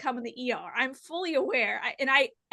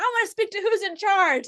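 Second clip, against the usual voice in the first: mock irate, loud, high-pitched angry voice; 7 semitones higher, 5 dB louder than usual. A charge nurse acts out an angry person, imitating an angry demand. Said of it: "There'd be some angry person like".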